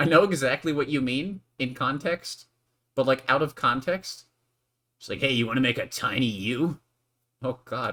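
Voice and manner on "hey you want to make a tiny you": fake cheesy flirting, louder. Joking about how a line sounds out of context: mock terrible flirting. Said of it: "a really terrible attempt at flirting".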